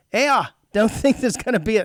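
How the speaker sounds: put-on Irish accent. Retelling what one guy waiting for a parade said, in an Irish accent. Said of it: "Is that an Irish accent?".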